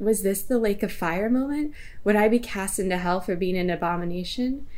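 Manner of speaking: ordinary talk, nothing marked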